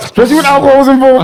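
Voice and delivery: high, fast, laughing mock reading voice.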